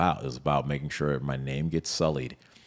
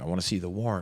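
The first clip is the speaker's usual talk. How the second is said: put-on insistent yelling; 4 semitones higher than usual. Retelling being cuffed and taken outside by agents: imitating own yelling.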